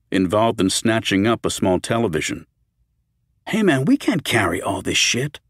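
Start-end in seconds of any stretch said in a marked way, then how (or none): 3.4-5.3 protesting, objecting tone. Roger protests to Peter, who is snatching up a television, protesting. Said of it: "Roger protested".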